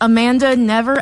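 plain

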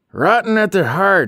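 shrill outcry, very high and loud. An old woman reminiscing with a companion: crying out. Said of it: "cried Miss Antonia".

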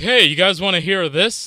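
casual, light, offhand tone. Retelling how one offers to do an impression, imitating himself offering an impression. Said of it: "me, uh, proposing to do an impression".

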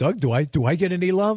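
ordinary delivery

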